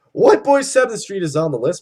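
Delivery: voice cracking mid-line, breaking. Reading out names on a list, voice cracking. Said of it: "My voice just cracked there".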